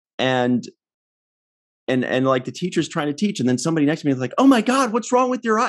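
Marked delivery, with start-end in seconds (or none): 4.4-5.7 very high-pitched, alarmed, freaked-out cry. Retelling what a person next to her in class said, imitating someone freaking out. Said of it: "Like she's freaking out".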